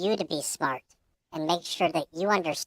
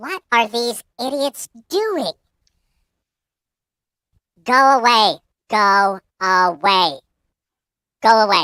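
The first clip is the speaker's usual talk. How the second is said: angry raven voice, much louder; 4 semitones higher, 10 dB louder than usual. The narrator voices a raven squawking at approaching players, mad raven voice. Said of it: "Why are you so mad?".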